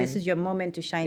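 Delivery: ordinary talk, nothing marked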